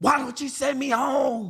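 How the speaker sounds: put-on high, slow kid's yell. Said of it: "yelled at her".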